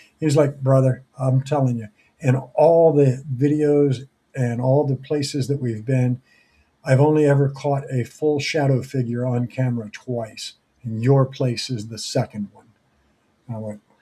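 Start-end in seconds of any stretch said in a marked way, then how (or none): none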